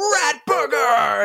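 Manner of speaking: put-on very high, shrieking child's screech. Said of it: "running up and down the hallway screaming".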